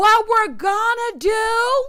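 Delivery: mock hollering, high-pitched and drawn slow.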